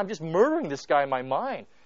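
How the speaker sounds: plain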